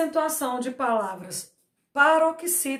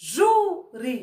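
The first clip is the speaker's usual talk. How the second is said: ju of júri stressed hard. Portuguese lesson on the stressed syllable, stress on first syllable ju. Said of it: "O ju saiu com mais força".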